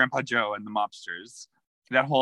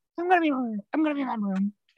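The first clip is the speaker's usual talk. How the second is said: put-on slurred speech, much higher and slower; 12 semitones higher than usual. Recapping a scene with friends, imitating Tanya's slurred words. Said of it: "slurred the words like".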